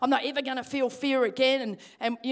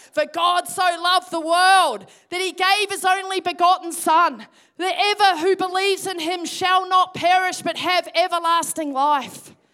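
shaky, loud, high heralding yell at top of voice; 6 semitones higher, 8 dB louder than usual. Retelling what they shouted after being called to be a witness: retelling a yell. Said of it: "I'm just yelling at the top of my voice".

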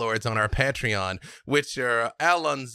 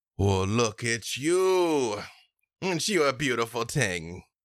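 put-on half-giant voice. Voicing a towering half giant greeting Tatiana: Hermos voice. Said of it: "he stands up to his full towering height, and he goes".

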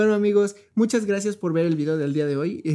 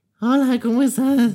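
pitched-up voice through the nose; 6 semitones higher, 5 dB louder than usual. Retelling how someone greeted them, imitating a nasal voice. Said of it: "como que muy nasal su voz".

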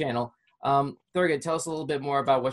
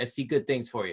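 usual speaking voice

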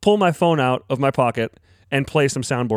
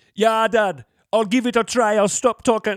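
put-on Jamaican accent, higher-pitched; 6 semitones higher than usual. Chet answers his dad, who asked him to stop the jamaican talk; put-on jamaican accent. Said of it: "Please stop with the Jamaican talk".

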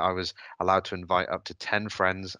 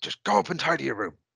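put-on very strong Irish accent, pitched up; 8 semitones higher than usual. Quoting Dad from teenage years, in a strong Irish accent. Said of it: "like in a very strong Irish voice".

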